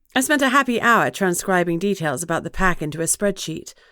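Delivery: ordinary delivery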